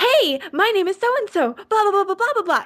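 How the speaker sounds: very high, perky, peppy chirping cheerleader voice. Imitating how some of them sound going on air: cheerleader-style voice. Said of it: "I didn't want cheerleaders".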